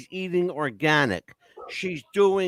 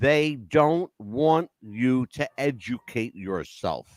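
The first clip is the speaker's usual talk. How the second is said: slow, low, deliberate, spelled-out delivery; 6 semitones lower than usual. Speaker tells his listeners he will say it slowly, speaking slowly. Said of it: "I'm going to say it slowly".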